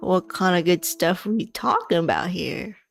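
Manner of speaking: put-on older dwarf man voice. Voicing the shopkeeper side-eyeing a player: older dwarf man voice. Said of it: "he side-eyes you, and he's like".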